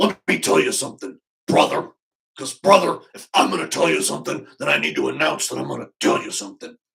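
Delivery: loud, rough bellow in wrestling promo style. Showing how wrestlers say the line: Hulk Hogan impression. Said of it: "And Hulk Hogan".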